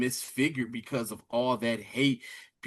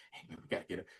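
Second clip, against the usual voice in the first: very quiet, hushed, breathy whisper; 6 semitones lower, 15 dB quieter than usual. Retelling a character's line in the tunnel: imitating a whisper. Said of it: "he calls himself whispering".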